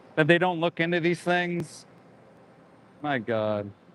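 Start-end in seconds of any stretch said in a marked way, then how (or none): none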